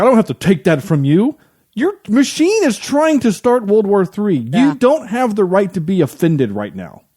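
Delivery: put-on defensive comeback. Retelling how a movie character answers criticism: imitating a defensive retort. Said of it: "he gets all defensive".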